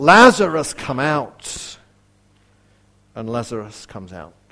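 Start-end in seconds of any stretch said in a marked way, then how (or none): 0.0-1.8 loud, full-voiced calling out. Retelling the moment Jesus calls Lazarus to come out, loud calling out. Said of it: "calls out in a loud voice".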